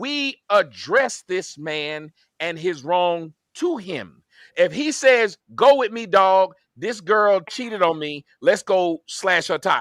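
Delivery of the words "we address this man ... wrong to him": slow, low, deliberate delivery, each word separated. Arguing with someone who isn't hearing him, repeating what he said: speaking slowly. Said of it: "I'll say it slow".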